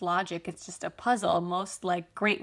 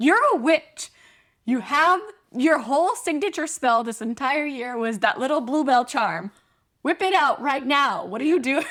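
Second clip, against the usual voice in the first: acted frantic, loud, high-pitched rant, losing control; 6 semitones higher, 8 dB louder than usual. Retelling a book scene where there's no wood, imitating Ron losing his mind.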